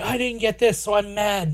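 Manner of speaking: whiny complaining tone. Mocking a film character's complaining: whiny Anakin impression. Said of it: "Anakin's all whiny and he's like".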